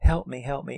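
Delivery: timid, pleading tone. Retelling a movie scene where a girl begs a driver: imitating a quiet little plea. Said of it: "in her quiet little way".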